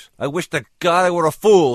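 very high, loud, shrill outcry with the voice cracking. A woman stands up to answer a man who called her remarkable; crying out, control cracking. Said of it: "she cried, feeling her control begin to crack".

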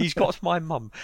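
high-pitched British accent.

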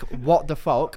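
plain

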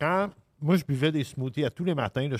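words pushed out around chewing food. Speaker chats with others while eating, talking with a mouth full. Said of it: "je parle mmh. à la bouche pleine".

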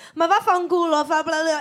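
mock shouted, screaming stream of Italian. Retelling a woman's reply after he asked her to swap: retelling screaming in Italian. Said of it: "screaming at me in Italian".

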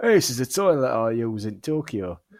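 put-on Yorkshire accent. Mimicking a video voiceover by someone from Yorkshire: Yorkshire accent. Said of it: "someone with a Yorkshire accent".

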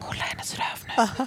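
acted whispering. Retelling whispering to a friend as her mom arrived, retelling a whisper. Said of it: "Så viskade till Rebecka när mamma kom".

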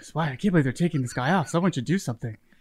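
quiet, acted-out whisper. Acting out a hypothetical protest to a neighbor: acting out a quiet whisper. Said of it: "I just whisper quietly to the person beside me".

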